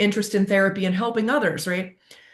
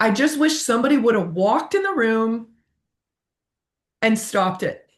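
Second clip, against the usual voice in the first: choked-up voice catching, emotional, close to tears; 3 semitones higher than usual. Speaker telling a personal story, getting emotional. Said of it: "I'm getting emotional when I'm saying".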